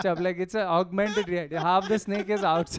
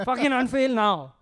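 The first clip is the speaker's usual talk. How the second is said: pitched-up swearing, said directly; 5 semitones higher, 4 dB louder than usual. Imitating Gary Vee swearing at someone who failed: Gary Vee swearing at you. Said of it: "He just swears at you".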